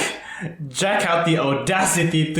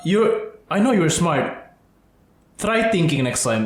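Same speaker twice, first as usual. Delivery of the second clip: normal talking voice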